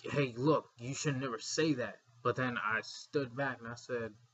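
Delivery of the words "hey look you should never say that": normal talking voice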